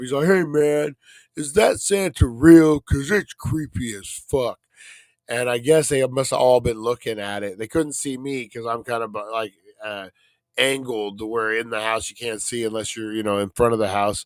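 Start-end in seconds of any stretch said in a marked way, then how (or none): 0.3-4.6 put-on young kid voice, loud, slow tough-guy bravado. Retelling a kid trying to be tough about a santa: imitating a kid trying to sound tough. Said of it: "trying to be tough".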